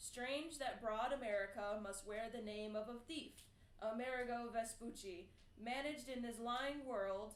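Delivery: ordinary delivery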